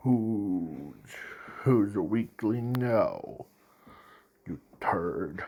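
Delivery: deep, dark villain-like murmur, very quiet and hushed. Retelling a scene, the speaker voices the one killing All for One: deep, dark voice. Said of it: "in his deep, dark voice".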